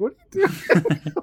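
mock puzzled tone, slow.

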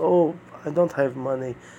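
mock rueful, sorry-sounding intonation. Showing how people turning down the book usually say it, with mock regret. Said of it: "most of the time they say with a regret intonation, the voice".

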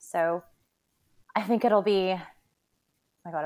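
breathless, out of breath. Speaker talking while going downstairs, out of breath. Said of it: "I'm out of breath".

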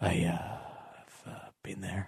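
faint, barely audible, barely voiced whisper. Explaining an impression he has done all day, whispered Patrick Warburton impression. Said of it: "my best Patrick Warburton impression all day for Anthony And it just basically is me whispering Just going".

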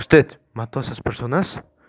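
ordinary delivery, nothing marked

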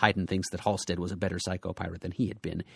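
ordinary talk, nothing marked

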